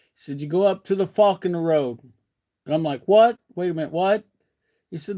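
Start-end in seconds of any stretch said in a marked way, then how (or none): 0.4-2.0 put-on northeastern US accent. Speaker retells a man giving directions to a shop: imitating a northeastern US accent. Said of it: "you got to be thinking northeastern accent here".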